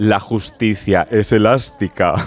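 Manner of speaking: very low, villainous voice. Recalling a line from the series Herederos, imitating Concha Velasco's evil voice. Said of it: "con voz de muy mala, malísima".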